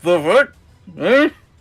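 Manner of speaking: smothered, muffled speech in a high voice. Voicing a character trapped inside a mouth: muffled voice. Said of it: "you hear a muffled voice".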